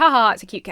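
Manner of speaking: disingenuous, forced fake laugh. Describing a cat video's caption to listeners; fake, disingenuous laugh. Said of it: "(Emma laughs disingenuously)".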